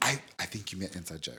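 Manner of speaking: very low, very soft, hurried delivery. Speaker reenacting their own remark during an argument: very quiet and quick. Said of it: "Very quietly and quickly".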